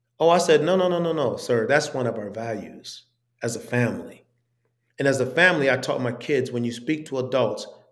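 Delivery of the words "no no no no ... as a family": usual speaking voice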